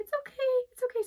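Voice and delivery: very high, reassuring, soothing cooing voice. Retelling calming a blue heeler running up to them: retelling a high-pitched soothing voice. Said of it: "I try to use my high pitched voice".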